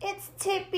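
calling out, crying out. Reading a character trying his bike without training wheels, cried out. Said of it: "he cried".

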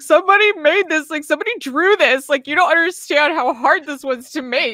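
put-on play-acted high, tearful, drunk, gushing awe. Retelling own words while watching Akira on stream, imitating own drunk crying. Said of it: "I got, like, really wine drunk, and I just started crying".

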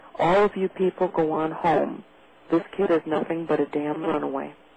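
usual speaking voice

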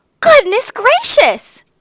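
very high, loud, ringing outcry. Two shoemakers enter their shop the next morning; exclaimed together. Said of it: "they both exclaimed".

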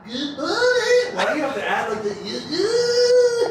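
high, laughing mock of a shout.

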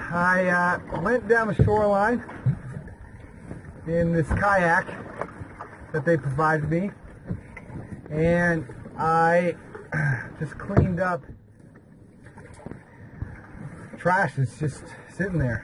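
breathless, winded talking, still catching air. Back from kayaking a shoreline to pick up trash, talking out of breath. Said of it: "I'm a bit out of breath".

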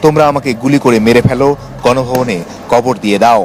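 ordinary talk

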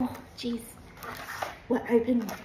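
hushed whisper under the breath. Getting a container open to add spice to a meal, whispering. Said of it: "I don't know why I'm whispering that".

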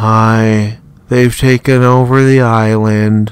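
very loud, slow, emotionless radio-style deadpan drone. Imitating a person heard on the radio, imitating a deadpan radio voice. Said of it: "the most deadpan voice for... He's like".

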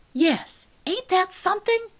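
outraged, very high indignation. Narrator reads Miss Crocker answering Mama about the books, indignant. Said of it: "in her indignation".

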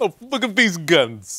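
put-on, poorly done New Jersey accent. Two hosts joke around, trying out New Jersey accents: bad New Jersey accent. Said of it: "New Jersey accents".

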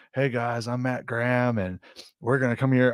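gentle, calm, soothing voice. Describing a bushcraft guy to another speaker: soothing voice of Matt Graham. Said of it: "Very soothing voice".

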